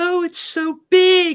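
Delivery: very high-pitched, slowed, drawn-out voice. Retelling a kids' movie ending, quoting her line in the film; really high-pitched voice. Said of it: "this really high pitched voice".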